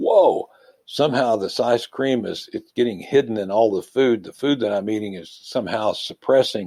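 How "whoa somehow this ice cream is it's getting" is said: usual speaking voice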